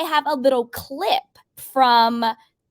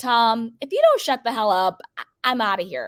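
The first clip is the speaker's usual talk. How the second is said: ordinary delivery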